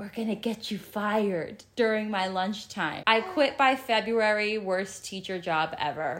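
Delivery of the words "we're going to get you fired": put-on, imitated whisper. Reading out an email about teachers at school: imitating a whisper. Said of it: "A teacher would whisper".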